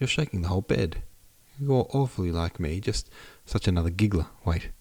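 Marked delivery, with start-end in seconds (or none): none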